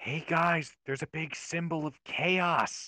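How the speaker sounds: loud stage whisper. Player character stage-whispering back to the party, in a loud stage whisper. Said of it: "loudly stage whisper back to the party".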